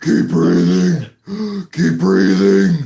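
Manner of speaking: loud, slow, gasping, pleading voice of dying woman.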